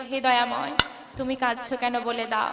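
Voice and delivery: humble, low, soft pleading.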